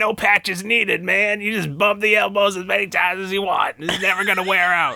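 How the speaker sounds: put-on voice pushed hard from the throat. Doing a Zeus line after being asked for a Wolfman Jack voice. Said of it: "you have to do the Wolfman Jack Zeus".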